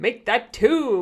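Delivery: loud, overdone, chest-puffed, showy big voice. Narrating men ordering drinks, one trying to outdo Frank: voice even deeper than Frank's. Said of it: "his voice even deeper than Frank's".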